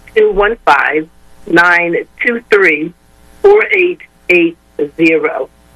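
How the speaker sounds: slow delivery, each digit spaced out. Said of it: "give us the number one more time slowly".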